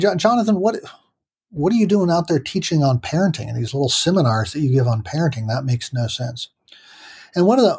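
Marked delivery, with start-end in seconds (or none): none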